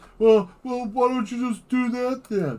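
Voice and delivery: very high, loud, dopey put-on voice. Mimicking the usual rebuttal from people who don't get it, in a mocking dumb-sounding voice. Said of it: "this is usually the rebuttal".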